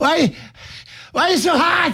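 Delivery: very high, panting, overheated dog voice. Voicing Rigby after he got out of the fenced yard, panting dog voice. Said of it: "he was panting, going".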